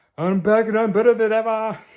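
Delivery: failed put-on Russian accent, very high, loud, shrill. Quoting the Red Guardian again, trying a Russian accent that fails. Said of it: "That wasn't Russian".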